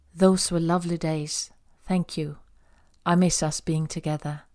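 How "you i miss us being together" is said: ordinary delivery, nothing marked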